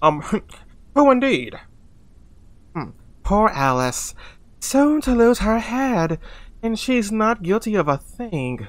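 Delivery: slow, drawn-out storybook cat voice. Never having seen the film, the speaker guesses at the Cheshire Cat voice. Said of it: "I'm assuming he sounds like this".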